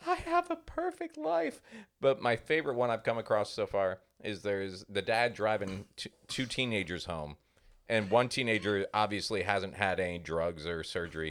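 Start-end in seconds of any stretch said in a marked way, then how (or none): 0.1-1.6 very high acted weepy sobbing voice. Retelling a drugged patient's reaction: imitating someone crying. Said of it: "starts crying".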